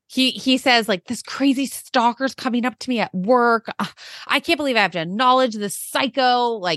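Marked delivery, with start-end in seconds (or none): 1.1-6.6 irritated, fed-up, angry, pissed-off ranting. Retelling what he said about a stalker at work: imitating him pissed off. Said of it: "he's pissed".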